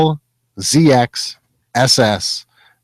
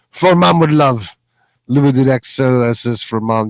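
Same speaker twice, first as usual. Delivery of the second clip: bad, weak, put-on Russian accent. Reading a note aloud to the others: bad russian accent. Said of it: "That wasn't a very good Russian accent".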